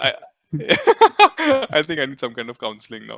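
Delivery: speaking through laughter.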